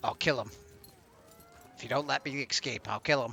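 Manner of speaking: demonic voice. Retelling what a possessed boy said, as if the demon is talking. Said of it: "almost as if the demon's talking and says".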